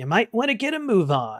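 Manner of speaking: disembodied voice with swooping pitch. Narrating to the players, voicing an unseen speaker in the dark: disembodied voice from the dark. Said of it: "the disembodied voice again from somewhere in the dark say".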